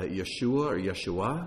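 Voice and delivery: Yeshua stressed first on start, then on the end.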